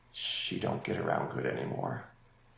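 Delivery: very soft, hushed whisper. Recounting what he felt he needed to address and whispered to you, retelling a soft whisper. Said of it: "he whispered to me".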